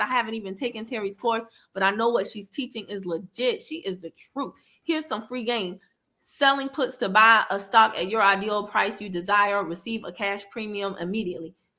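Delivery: ordinary delivery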